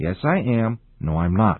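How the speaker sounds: ordinary talk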